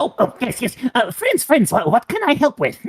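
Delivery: perked-up, very high, swooping kobold voice. Voicing a kobold who greets the approaching party: kobold voice. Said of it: "he perks up as you approach the, um, entrance, and he goes".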